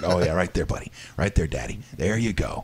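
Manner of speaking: low, perverted-sounding, suggestive coaxing voice. Voicing the dog being scratched: voicing the dog, sounding perverted. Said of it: "it sounds perverted when you say it like that".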